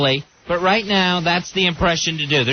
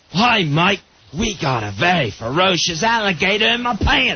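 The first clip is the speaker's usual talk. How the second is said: put-on Australian accent. Showing how everyone imitates the Crocodile Hunter: Crocodile Hunter impression. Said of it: "It's just an Australian accent".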